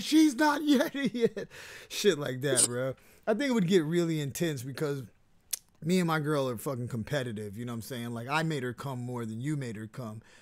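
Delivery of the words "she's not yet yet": put-on yell, higher and louder. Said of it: "yelling at me like".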